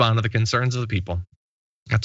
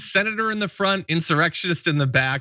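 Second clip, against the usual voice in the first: ordinary talk, nothing marked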